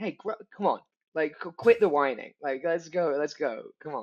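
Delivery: lively, energetic, pushing delivery. Retelling own reaction to a whining movie character: imitating own energetic urging. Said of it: "with a real energy being like".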